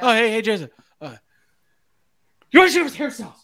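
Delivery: high-pitched, nervous, flustered blurted line.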